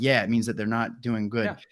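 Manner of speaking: ordinary talk, nothing marked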